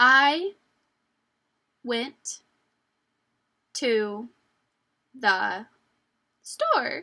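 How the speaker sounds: loud, halting, very slow word-by-word reading. Showing listeners how not to read aloud, reading a sentence too slowly. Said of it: "we don't want to read too slow".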